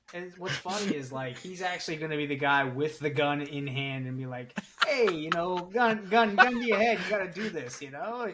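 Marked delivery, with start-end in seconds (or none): 4.8-8.3 put-on Italian mobster accent. Picturing him as the guy with the gun pushing a bet: stereotypical Italian mobster voice. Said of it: "All of the things that would be stereotypical Italian mobster".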